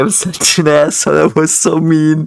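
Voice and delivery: talking through laughter. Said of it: "I don't know why I'm laughing".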